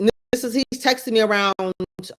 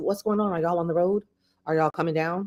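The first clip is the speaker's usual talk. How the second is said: ordinary talk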